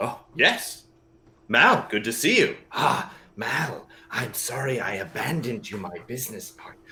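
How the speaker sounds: grumbled aside, muttered mostly to himself. Voicing a character who mutters sarcastically at a returned partner: muttering under his breath. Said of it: "he starts muttering under his breath".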